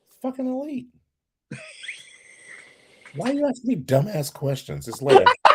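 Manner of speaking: high, loud, mock angry ranting voice.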